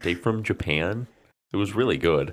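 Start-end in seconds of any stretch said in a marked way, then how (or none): 0.0-1.1 put-on American accent. Recalling a video, imitating Chris Broad's American accent. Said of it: "when Chris Broad did his American accent".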